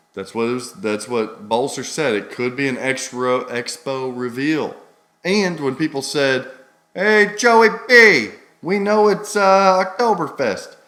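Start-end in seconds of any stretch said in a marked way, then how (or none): 6.9-10.6 put-on Chicago accent, much higher and louder. Imitating what people said to the host, in a Chicago accent. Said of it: "there's a Chicago".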